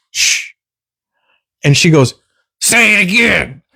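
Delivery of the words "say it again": mock loud, obnoxious voice, higher. Retelling a woman answering a girl who shushed her: imitating someone loud and obnoxious. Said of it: "she's being loud and obnoxious".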